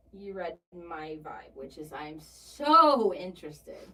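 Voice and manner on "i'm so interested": "so interested" drawn out slow and loud, sarcastic. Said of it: "being sarcastic about Cody being interested".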